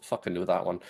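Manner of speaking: muttering, mumbling under breath. Voicing a character who hears an answer: muttering to himself. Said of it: "He mutters to himself".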